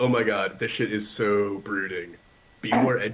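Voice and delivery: dripping, scornful, mocking sarcasm. Voicing a character who reads poems aloud: sarcastic. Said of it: "just like reading these poems sarcastically".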